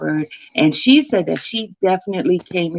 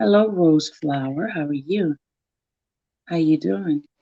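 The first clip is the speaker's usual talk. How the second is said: deliberately very slow, stretched-out, drawn-out delivery. A host greets someone while waiting for the computer, talking very slowly. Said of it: "I'm talking very, very slow".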